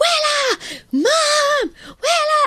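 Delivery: very high put-on child scream, "mom" drawn out. Retelling a child jumping up and down calling out: imitating a child screaming. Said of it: "jumping up and down, screaming".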